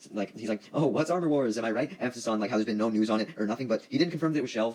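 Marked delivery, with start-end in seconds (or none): 0.7-2.0 play-acted, teasing, playful, jokey, pitched up. Retelling how Don Cheadle answered about Armor Wars: imitating Don Cheadle's joking tone. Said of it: "he says it in, like, a, a funny way".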